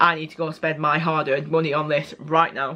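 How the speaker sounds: ordinary talk, nothing marked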